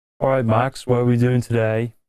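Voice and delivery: cocky, brash guy delivery. Show the others what he sounds like, addressing Max in a Chad impersonation. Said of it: "I'll impersonate Chad".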